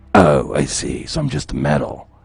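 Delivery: growling put-on soldier voice. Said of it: "make your voice more growling".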